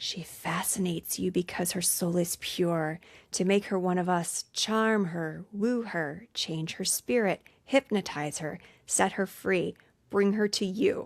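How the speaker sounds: sinister, hushed, put-on half-whispering voice. Retelling a scene, the speaker voices the father talking to Darkness: creepy half-whisper. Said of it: "he whispers like".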